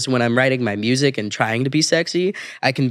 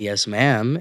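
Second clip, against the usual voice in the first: put-on odd tired voice, lower; 3 semitones lower than usual. Retelling a reply at a drive-through window, said while tired: imitating own odd tired "Yes, ma'am". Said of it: "I said it in a way that was like".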